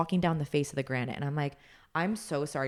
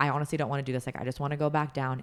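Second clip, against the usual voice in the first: put-on frightened, freaked-out voice. Retelling answering someone encouraging the climb: imitating own past fear. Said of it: "that started freaking me out more".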